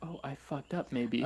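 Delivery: ordinary talk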